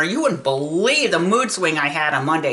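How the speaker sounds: normal talking voice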